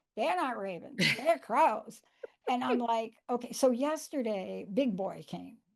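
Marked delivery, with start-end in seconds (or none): 0.1-2.0 put-on New Jersey accent. Retelling a morning-coffee chat with best friend Linda: imitating Linda's New Jersey accent. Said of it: "Do I do a New Jersey accent?".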